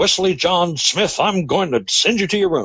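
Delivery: high-pitched, cross, angry scolding voice. Example of a mother calling a child by full name: mock-angry scolding. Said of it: "you can tell that's anger".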